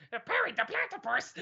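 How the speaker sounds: high-pitched, soft cartoon voice. Streamer shows what their failed Donald Duck attempt sounds like, Doofenshmirtz voice. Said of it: "or Doofenshmirtz".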